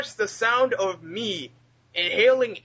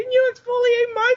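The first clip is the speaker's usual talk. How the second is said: put-on nasal voice, higher and louder; 13 semitones higher, 4 dB louder than usual. Retelling a scene of a straight-faced character: imitating a nasally character voice. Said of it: "the nasally voice just cracks me up".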